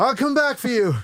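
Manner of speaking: high, loud belted voice. Showing the warm-up line used to talk like a character: Poe Dameron voice. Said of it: "before every line, I'd go".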